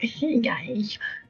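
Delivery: put-on soft, high, cutesy little-kid voice. Recalling an attempt at a cutesy voice that came off childish: childish cutesy voice. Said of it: "a cutesy voice, but it ended up just coming off as like a childish sort of like".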